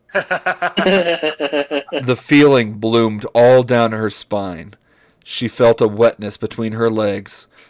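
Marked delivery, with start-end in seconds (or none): 0.1-3.9 very slow reading through laughter. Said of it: "[name]'s gone Santa Claus again".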